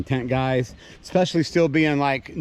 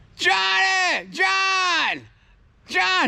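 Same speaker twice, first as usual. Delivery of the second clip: very high, stretched-out calling yell. Retelling calling another person's name during a storm: imitating own screaming. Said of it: "I'm over here screaming".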